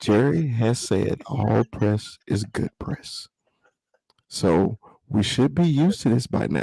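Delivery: calm, hushed stage whisper. Speaking to the guys with the mic brought up, whispering so as not to get carried away. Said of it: "that's why I'm whispering".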